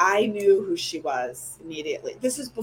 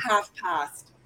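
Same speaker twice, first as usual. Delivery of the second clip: weak put-on British accent; 3 dB quieter than usual. Quoting her reply when asked the time: bad British accent. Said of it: "I can't do a good British accent".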